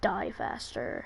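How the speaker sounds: growling voice. Retelling a short story in which a voice speaks: growly voice. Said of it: "in this kind of growly voice".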